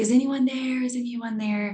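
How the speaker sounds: acted, high, frightened calling out. Telling a story of a man hanging above a tiger, act out his scared call. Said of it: "he's obviously really scared".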